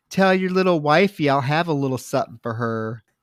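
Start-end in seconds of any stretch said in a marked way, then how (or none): none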